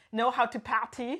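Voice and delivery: put-on German accent. A speaker shows off their German accent: fake German accent. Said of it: "This is my German accent".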